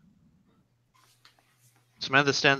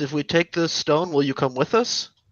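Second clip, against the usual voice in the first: usual speaking voice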